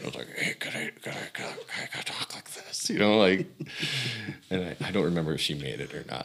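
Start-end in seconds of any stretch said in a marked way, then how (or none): 0.3-2.9 whispered through tight, closed lips. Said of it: "my mouth got real tight".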